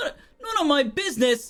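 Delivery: very high, angry, affronted, indignant tone. Voicing a beggar repeating a rider's brush-off: angry beggar. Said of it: "getting angry at this point".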